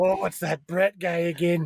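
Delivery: put-on Scottish accent. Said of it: "I like your Scottish postal worker".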